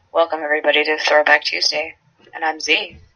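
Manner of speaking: very low, flat, droning monotone. A co-host mocks how Z opens the podcast, imitating Z's monotone. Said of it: "you monotone motherfucker".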